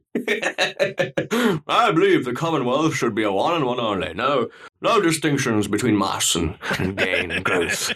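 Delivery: put-on slow, drawled, posh bourgeois English accent. Imitating Arnold Schwarzenegger as an English bourgeoisie member. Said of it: "an English bourgeoisie member".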